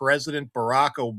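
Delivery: plain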